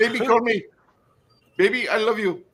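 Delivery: put-on Indian accent in a very high voice. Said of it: "if we're gonna go Indian".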